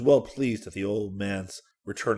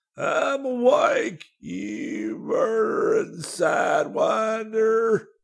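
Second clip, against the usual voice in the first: very high, very slow, drawn-out wheezing; 14 semitones higher, 4 dB louder than usual. A wounded old man opens his eyes to a masked face; wheezing. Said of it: "he wheezed".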